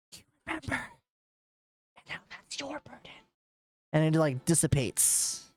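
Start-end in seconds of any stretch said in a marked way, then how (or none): 0.1-3.0 high, very quiet, barely audible hushed whisper. Voicing a mysterious whisper heard by two players: quiet whisper. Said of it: "you hear this whisper come through".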